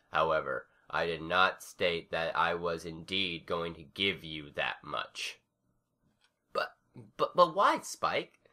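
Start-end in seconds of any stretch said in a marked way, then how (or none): 6.5-8.2 very high, faltering, frail stammering. Scootaloo questions Spike after his explanation, stammering. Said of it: "Scootaloo stammered".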